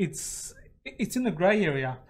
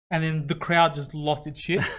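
ordinary delivery

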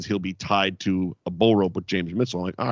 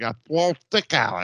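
slurred, tongue-tied, mumbling, mush-mouthed delivery; 3 semitones higher than usual. Imitating the man he is mocking: imitating a mumbling man. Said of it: "that's exactly how he sounded".

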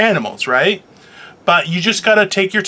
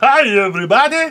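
raised pitch, sound driven from throat, tongue loose; 6 semitones higher than usual. Demonstrating the greeting, sound from the throat: Doctor Nick impression. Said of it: "use your throat".

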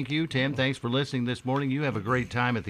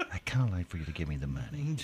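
pretend whispering, lower and quieter; 6 semitones lower, 6 dB quieter than usual. Imagining robbing a bank politely, mock whisper as a bank robber.

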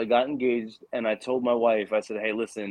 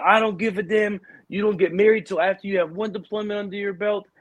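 mock screaming, higher pitch; 9 semitones higher than usual. Retelling what a superior said in an angry outburst about a personal decision. Imitating someone screaming. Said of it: "starts screaming at me".

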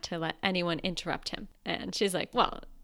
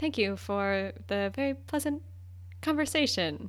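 mock, put-on awkward delivery; 2 semitones higher than usual. Retelling how he said goodbye to her in front of everyone, mock-awkward goodbye. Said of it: "he very awkwardly says goodbye".

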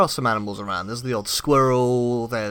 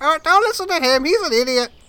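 parrot-like voice; 4 dB louder than usual. Voicing a second parrot who talks about the first: parrot voice. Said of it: "a second parrot flies down".

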